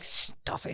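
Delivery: mock delivery through gritted teeth. Retelling what she said about the snoring, through gritted teeth. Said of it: "Through gritted teeth".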